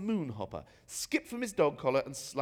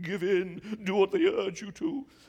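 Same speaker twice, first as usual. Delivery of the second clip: words moaned more than spoken; 5 semitones higher, 6 dB louder than usual. Reading a story aloud, a bishop urges giving in: moaning the words. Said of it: "more as if he was moaning than talking".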